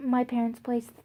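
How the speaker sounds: ordinary delivery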